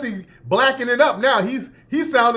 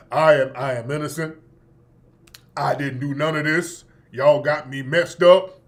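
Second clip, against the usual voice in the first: put-on bass voice, much lower; 9 semitones lower than usual. Speaker acts out Jesse's denial in Jesse's bassy voice. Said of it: "all that damn bass in his voice".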